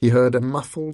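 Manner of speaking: ordinary delivery, nothing marked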